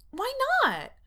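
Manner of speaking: shrill voice, very high-pitched and very loud. Confronting a man she suspects, she asks shrilly. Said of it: "Erica asks shrilly".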